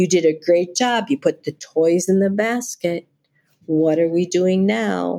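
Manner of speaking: relaxed, unhurried, steady, slowed-down calm voice. Showing how to prompt someone who got lost on their steps; slow calm voice. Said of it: "giving them that slowed down voice, that's calm".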